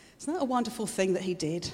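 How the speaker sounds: ordinary delivery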